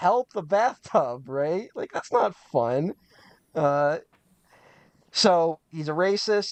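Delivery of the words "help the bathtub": put-on frightened, scared old man's voice. Describing a show's old man in peril, imitating a scared old man. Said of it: "like a scared old man being like".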